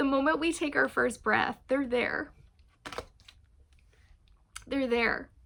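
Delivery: high, choked, teary voice, close to crying. Speaking about a long friendship, the speaker chokes up, teary. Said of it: "they're making me cry".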